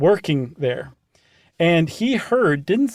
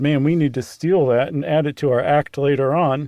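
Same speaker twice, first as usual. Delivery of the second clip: ordinary delivery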